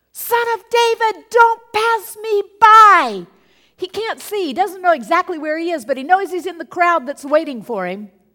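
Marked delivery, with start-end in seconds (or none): 0.1-3.2 very loud, high, drawn-out calling-out yell. Retelling how a blind man by the road called out: imitating a blind man yelling. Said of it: "he's yelling".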